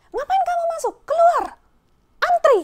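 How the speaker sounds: very high shrill loud angry shouting, acted out. Retelling how a cashier ordered them out: imitating a cashier shouting. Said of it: "sambil melotot-melotot gitu".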